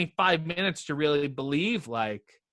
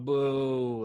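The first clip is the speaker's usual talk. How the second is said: imitated booing, pitched much lower; 2 semitones lower than usual. Describing how fans react, the speaker imitates fans booing. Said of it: "that's a really good impression of fans".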